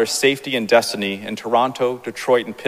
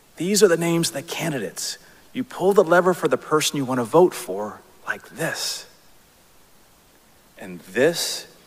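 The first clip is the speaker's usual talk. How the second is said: put-on whisper, higher pitch; 4 semitones higher than usual. Retelling how Mom showed the voting booth names: imitating a whisper. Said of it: "Mom leans over and whispers to me".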